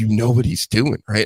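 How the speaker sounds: put-on laughing voice. Retelling what a bartender said: imitating a laughing bartender. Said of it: "she's laughing".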